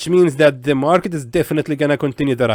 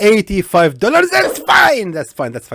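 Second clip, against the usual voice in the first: screaming with excitement, high and swooping; 6 semitones higher, 3 dB louder than usual. Trader on a live account, a trade just won, excited screaming. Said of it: "sorry guys for screaming".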